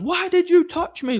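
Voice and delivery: play-acted, very high, loud, shrill screeching scream. Retelling a confrontation, the speaker imitates the woman screaming at him. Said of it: "and she started screaming at me".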